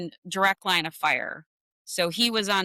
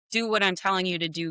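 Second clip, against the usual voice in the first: usual speaking voice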